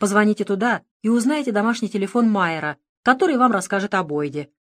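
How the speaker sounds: ordinary delivery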